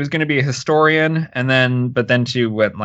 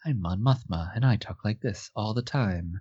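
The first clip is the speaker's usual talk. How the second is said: soft voice with no spark at all; 3 semitones lower, 10 dB quieter than usual. Describing how Mon Mothma talks, in a Mon Mothma impression. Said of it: "she's just like".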